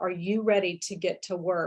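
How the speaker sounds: flat deadpan voice. An interior designer retells grabbing a client's hands, retelling a deadpan line. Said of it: "I looked her deadpan in the face and I said".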